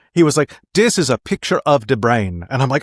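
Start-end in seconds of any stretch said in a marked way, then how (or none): 0.8-2.5 put-on deep South African accent. Recalling a cognitive psychology class taught by a south african guy: south african accent impression. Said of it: "from a South African guy".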